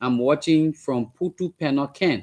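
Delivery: ordinary talk, nothing marked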